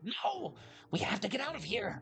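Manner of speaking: whispered line. Voicing a character urging escape into another's ear: whispering. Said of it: "he whispers down into Dale's ear".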